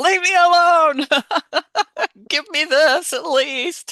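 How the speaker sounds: high, loud, shrill scream, exasperated and fed-up. Acting out a mother in the bathroom answering her knocking kids, retelling a scream. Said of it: "she's screaming at them".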